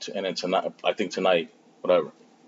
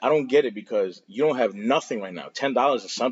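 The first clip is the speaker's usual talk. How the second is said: usual speaking voice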